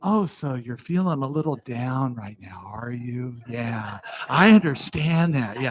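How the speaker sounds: condescendingly calm, patronizing talk-show host voice. Talking to someone very crabby, putting on a patronizingly calm NPR-host voice. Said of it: "I'll get this patronizingly calm voice, almost like an N P R talk show host".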